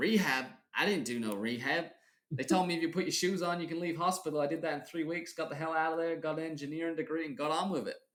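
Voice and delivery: put-on Southern American accent. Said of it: "he's got a Southern accent".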